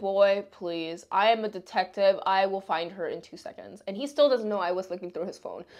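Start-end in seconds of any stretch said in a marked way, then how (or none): none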